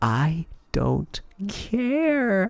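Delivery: hushed voice. Voicing a mother in a game scene, telling her daughter: whispering. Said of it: "she whispers to you".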